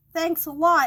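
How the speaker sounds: sarcastic yell. Retelling calling out to the garbage men: retelling a yell. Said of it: "I yelled".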